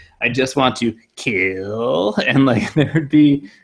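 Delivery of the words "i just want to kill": very slow cartoon woodchuck voice, "kill" stretched out. Explaining how a character's voice comes across, perform MODOK like Dave Coulier's woodchuck voice. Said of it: "Dave Coulier doing his woodchuck voice".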